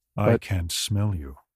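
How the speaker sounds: low, slow, sultry and sensual voice. Doing the line the low and sultry way someone prefers. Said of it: "I prefer the low and sultry way of doing it".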